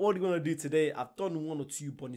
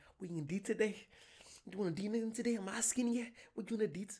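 high put-on Scottish accent with Irish creeping in; 6 semitones higher, 5 dB quieter than usual. Speaker tries out lines in a put-on Scottish accent. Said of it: "with the Scottish accent".

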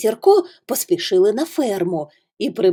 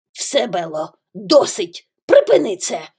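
cross, angry scolding tone. Narrating a dog telling a cow to stop her act, angry voice. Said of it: "сказав він сердитим голосом".

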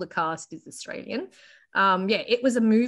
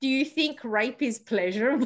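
acted, mock-sarcastic tone; 2 semitones higher than usual. Retelling what a woman said, the speaker acts out her sarcastic, rhetorical question. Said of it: "in a sarcastic, rhetorical manner".

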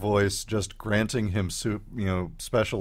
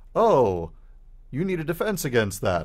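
odd put-on computer voice, swooping high; 5 semitones higher than usual. Retelling a story where a computer voice answers a dying man, strange computer voice. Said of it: "the computer voice says".

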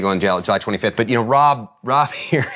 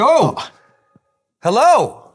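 very high, loud shouted yell; 13 semitones higher, 5 dB louder than usual. Greeting the guest who agreed to help announce the match, yelling. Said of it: "I don't know why I'm yelling".

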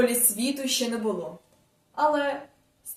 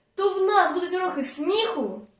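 high, eager, excited exclamation; 7 semitones higher than usual. A pupil responds to the new teacher's announcement, exclaiming. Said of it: "вигукнув Кося".

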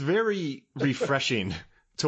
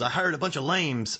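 put-on Northern Irish accent; 2 semitones higher than usual. Quoting Deirdre's line from the movie: Deirdre's Northern Irish accent. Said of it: "in her Northern Irish accent".

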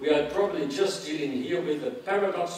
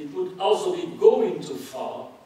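also stressed heavily, higher pitch, louder, slowed down. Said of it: "I will stress, uh, certain words".

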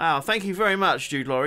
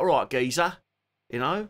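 put-on strong Cockney accent. Showing how the speaker talks, in a proper cockney accent. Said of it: "like a proper Cockney".

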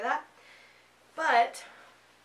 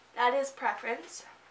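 ordinary talk

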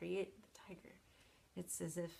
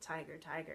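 forceful stress on first syllable ti of tiger; 2 semitones lower than usual. Explaining a forceful poem rhythm: forceful stress on first syllable of tiger. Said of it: "the rhythm that puts the emphasis on the first syllable".

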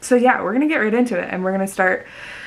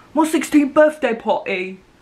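really bad put-on reality-show accent; 4 semitones higher than usual. Repeating a line from the show in a bad Love Island accent. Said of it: "the kind of accent that I do when I watch Love Island".

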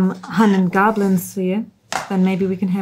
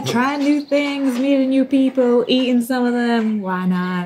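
openly sarcastic, mock-earnest, slightly raised pitch; 5 semitones higher than usual. Speaking in character to a companion about drinking goblin: sarcastic. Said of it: "I'm sensing a small degree of sarcasm".

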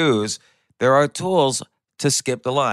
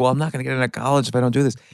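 put-on tearful crying voice. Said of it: "she's, like, crying".

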